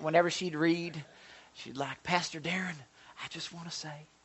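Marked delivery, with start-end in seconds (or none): 2.0-3.9 mild, soft Tennessee way of talking. Imitating a woman from the prayer group reading aloud, imitating a Tennessee accent. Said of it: "she was kind of sort of a Tennessee accent".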